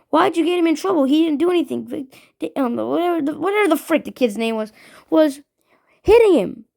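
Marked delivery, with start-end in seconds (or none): 0.1-1.8 angry, heated, argumentative voice. Retelling arguing with a teacher over a friend's trouble: imitating own angry arguing. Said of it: "started arguing with Miss Velasquez because I was mad".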